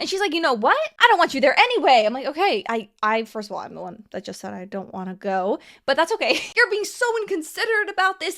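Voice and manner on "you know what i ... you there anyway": mock raised, higher-pitched, combative voice. Retelling what a woman said when she started a fight at a cafe, retelling a raised voice. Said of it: "Raising her voice at this cafe trying to fight".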